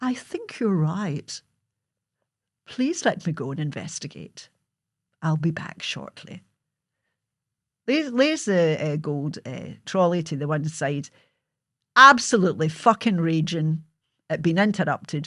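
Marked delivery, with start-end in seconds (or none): 0.0-6.4 put-on genteel, polite society voice, not her own. Retelling the mother answering a Women's Guild woman: imitating mother's Women's Guild voice. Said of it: "Women's Guild voice, it's not really how she spoke".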